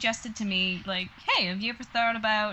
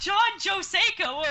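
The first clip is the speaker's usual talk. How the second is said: put-on high-pitched calling out; 10 semitones higher, 3 dB louder than usual. Recalling spotting him during an evacuation, retelling a yell across the room. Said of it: "I yelled right across the room".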